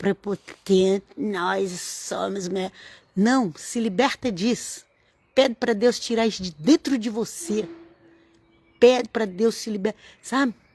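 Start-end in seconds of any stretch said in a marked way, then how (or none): 1.2-2.7 slow, drawn-out, smug, arrogant, self-important delivery. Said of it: "é arrogante, prepotente".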